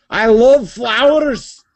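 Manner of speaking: angry Scottish accent, pitched very high. Explaining that anything said in a Scottish accent sounds angry: angry-sounding Scottish accent. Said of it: "in a Scottish accent, it sounds like you're really pissed off".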